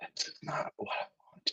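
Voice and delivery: barely-there, faint, breathy whisper. Reading a story aloud, voicing an old man in bed: whisper. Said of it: "he whispers".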